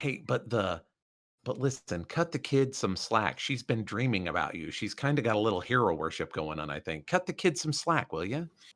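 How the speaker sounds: low, hushed, leaning-in conspiratorial aside. In character, leaning in to ask someone to cut the kid slack, conspiratorially. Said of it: "lean in like conspiratorially and just be like".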